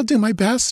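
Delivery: gasped out at a very high pitch. After Conan shakes her and urges her on, she answers him, gasping. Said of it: "she gasped".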